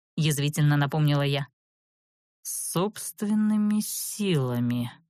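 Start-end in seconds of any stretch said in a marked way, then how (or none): 2.5-4.9 slow, repeated delivery. Veres repeats the narrator's words back to her, slow repetition. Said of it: "медленно повторил Верес".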